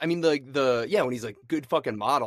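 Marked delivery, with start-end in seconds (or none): none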